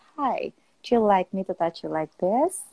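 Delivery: calm, easy, relaxed, dialed-back delivery. Demonstrating not rushing your words when speaking English: slow, relaxed, toned-down. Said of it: "you say it slowly ... you just say like ... tone down, you feel like more relaxed".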